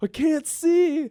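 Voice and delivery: sobbing wail, very high and very loud. Retelling how an injured coworker answered while crying: imitating someone crying. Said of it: "And he starts crying".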